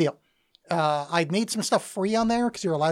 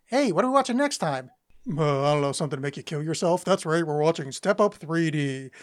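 mocking impression voice. Pitching a joke ending for the show: John impression. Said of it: "That was my John impression".

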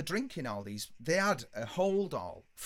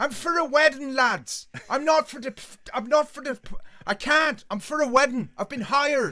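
stumbling, high, very loud, drawn-out shout; 9 semitones higher, 11 dB louder than usual. Retelling how the bus driver leaned round to the lads: imitating the driver shouting. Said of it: "shouting at us".

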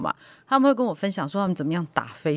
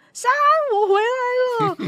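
acted out, very high, long drawn-out shout; 6 dB louder than usual. Retelling how a friend shouted out the car window on the mountain: imitating a loud shout. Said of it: "大声喊说".

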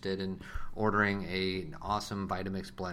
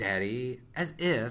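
full-on sassy attitude voice; 4 semitones higher, 3 dB louder than usual. Asked what the sassy voice sounds like, showing it, sassy voice. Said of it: "sassy voice".

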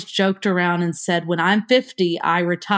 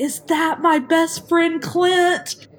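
very high, full-throated screaming shriek; 9 semitones higher than usual. Retelling how Bulldog greeted an old friend at a party: imitating someone screaming. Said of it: "Bulldog was screaming".

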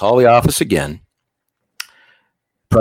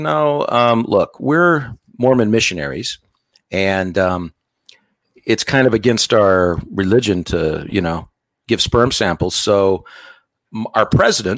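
ordinary talk, nothing marked

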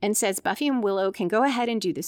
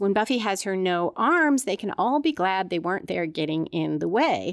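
ordinary delivery

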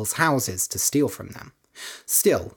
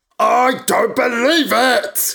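shrill, very high, loud roar of disbelief; 9 semitones higher, 7 dB louder than usual. A narrator reads a character's outburst in a story: roaring. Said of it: "Roared Candida".

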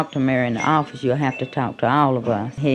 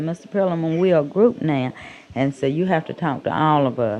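normal talking voice

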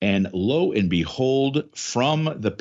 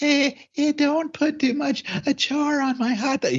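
very high, flat, level voice, slow and drawn out. Imitating Missus Bowdron at the grill: imitating Missus Bowdron. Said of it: "That's my impression of Missus Bowdron".

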